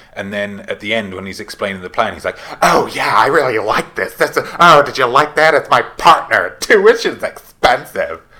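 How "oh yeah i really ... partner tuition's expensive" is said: put-on camp villain voice, higher and louder. Imitating the revealed killer explaining his plan: camp Timothy Olyphant voice.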